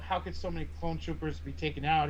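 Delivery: ordinary delivery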